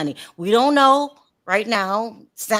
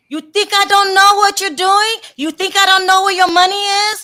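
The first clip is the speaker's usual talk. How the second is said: put-on Dominican accent, higher and louder; 11 semitones higher, 6 dB louder than usual. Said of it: "in her, uh, Dom-, is she Dominican? Dominican accent".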